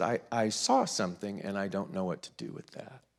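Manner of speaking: soft, mechanical, robot-like delivery. Retelling his answer to an assistant who asked if he was okay, imitating a robotic monotone. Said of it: "And very robotically".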